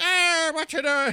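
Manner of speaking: put-on belted out high in an Irish accent. Retelling how a game character talks in dreams: imitating Sean's Irish accent. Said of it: "his accent gets in my head".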